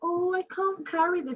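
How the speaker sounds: put-on helpless, flirty, pleading tone, pitched very high. Acting out someone pretending they cannot carry something: imitating a flirty helpless plea. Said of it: "some people pretend, you know, to be like".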